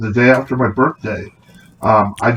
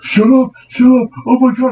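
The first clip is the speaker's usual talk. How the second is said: put-on panic, much higher, louder, slower; 13 semitones higher, 5 dB louder than usual. Retelling a scary flight, acting out the other guy freaking out. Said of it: "the other guy's just freaking out".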